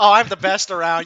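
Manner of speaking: mocking, cocky and boastful put-on voice. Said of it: "like the guy who just keeps talking".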